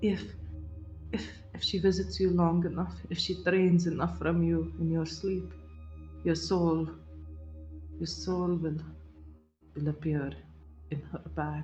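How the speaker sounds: hushed, halting whisper under the breath. Game narrator voicing a figure the players overhear: whispering to herself. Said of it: "She whispers to herself".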